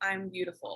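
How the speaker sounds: very quiet, soft, low, shy murmur. Recalling how the speaker used to say it: put-on shy, lower tone. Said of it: "I'd say it in a lower tone, like I'm beautiful. It was very like shy".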